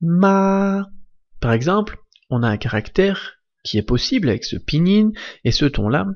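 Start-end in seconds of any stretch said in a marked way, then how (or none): 0.0-0.9 ma said with high, steady, level first tone. Teaching the first tone, repeating ma with high level first tone on ma. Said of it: "Le premier ton se prononce ma".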